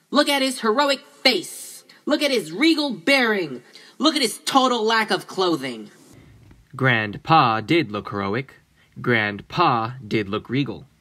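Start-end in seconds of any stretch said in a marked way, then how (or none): 0.1-5.9 very high-pitched, insistent and demanding tone. Reading characters urging another to look at a grandfather's portrait: demanding. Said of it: "they demanded".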